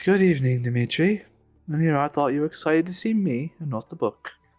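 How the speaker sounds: flirtatious delivery. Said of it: "bordering on flirting".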